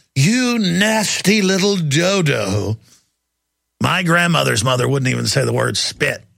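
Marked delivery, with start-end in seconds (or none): 0.1-2.7 put-on very slow old granny voice, "dodo" stretched out. Name-calling the FBI, sounding like the speaker's grandmother's grandmother. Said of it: "I sound like my grandmother's grandmother now".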